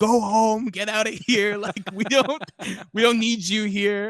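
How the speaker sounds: very high, very loud, shrill, drawn-out yelling. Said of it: "she just starts yelling at us".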